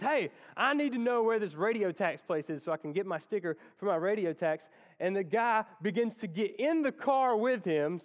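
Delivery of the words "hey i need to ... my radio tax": normal talking voice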